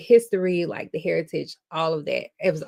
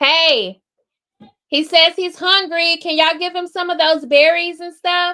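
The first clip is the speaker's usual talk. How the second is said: very high-pitched, loud hollering; 12 semitones higher, 8 dB louder than usual. Calling out to others for food for a hungry child, yelling. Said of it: "Cover your ears. I gotta yell".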